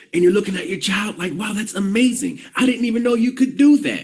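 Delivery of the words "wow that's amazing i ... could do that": mock proud, amazed parent tone, higher. Retelling homeschooling, looking at the child: imitating a proud amazed parent. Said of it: "really proud and, and there's all this triumph".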